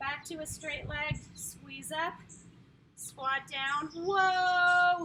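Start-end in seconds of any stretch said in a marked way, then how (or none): 3.0-5.1 long, very loud, drawn-out scream. Leading a workout through squats and the thigh burn, screaming. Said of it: "Sorry I'm screaming".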